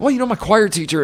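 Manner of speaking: put-on loud, high starstruck child voice. Retelling a press conference scene, imitating a starstruck kid. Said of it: "starts speaking like this starstruck kid".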